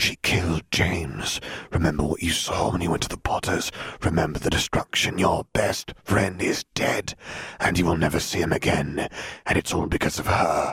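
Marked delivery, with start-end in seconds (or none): none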